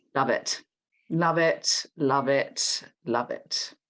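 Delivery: slow, heavily sarcastic drawl. Thanking a pal for joining to talk about speed dating: sarcastic tone. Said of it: "As you can tell by the tone of my voice".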